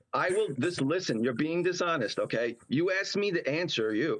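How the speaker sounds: normal talking voice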